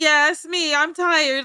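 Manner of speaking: slow, teasing, mocking put-on drawl. Mimicking the other speaker about their drawing: mocking imitation of the other speaker. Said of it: "and you're like".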